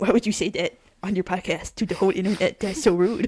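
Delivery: put-on dog voice. A podcast host acts out what her dog says, voicing her pet dog. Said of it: "her voice is more like this".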